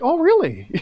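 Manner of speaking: put-on surprised reaction. Imitating another speaker's reaction to a pick: imitating someone's surprised reaction. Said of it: "You're like".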